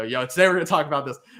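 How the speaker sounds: fast, quick, rattled-off delivery. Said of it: "'cause I always go".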